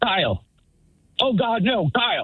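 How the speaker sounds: high, drawn-out, alarmed, pleading, acted. Retelling being woken at night by a friend's wife, imitating her alarm. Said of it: "I hear Kyle's wife being like".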